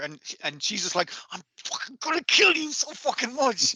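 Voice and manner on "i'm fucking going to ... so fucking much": very high, sputtering, rage-choked voice. Retelling an anime scene: imitating someone choking on rage. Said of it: "choking on her own rage".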